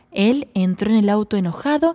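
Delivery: plain reading voice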